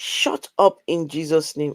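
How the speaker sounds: ordinary talk, nothing marked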